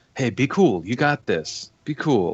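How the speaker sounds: encouraging, conspiratorial stage whisper. Player's character leans in to whisper in Gnomish to a companion; whispering. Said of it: "Namish whisper to Duel".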